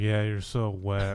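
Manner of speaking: fake sarcastic delivery. Acting out a line from sarcastic porn: mock sarcastic porn line. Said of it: "He's like".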